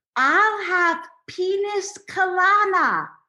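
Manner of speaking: slow, high-pitched deaf-speech voice. Retelling how Mom ordered a drink from the waiter, imitating Mom's deaf voice. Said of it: "in her best deaf voice".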